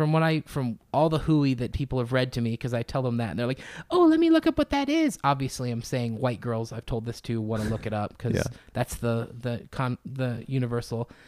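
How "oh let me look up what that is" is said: put-on young girl voice, much higher pitch.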